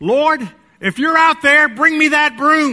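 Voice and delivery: very high, loud hollering yell. Telling a joke where Bubba cracks the back door: imitating Bubba yelling out. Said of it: "He cracks it and yells out".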